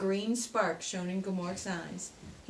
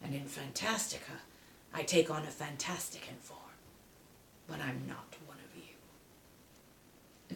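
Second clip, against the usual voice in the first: hushed, breathless dying werewolf voice with heavy breaths; 4 semitones lower, 7 dB quieter than usual. Reading a story aloud, the narrator voices Gmork speaking to Atreyu: Gmork, dying werewolf, breathing heavily. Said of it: "but at length the werewolf breathed heavily and spoke. / Gmort gnashed his teeth. / but at length the werewolf breathed heavily and spoke. / Atreyu sat down on the ground and gazed at the dying werewo".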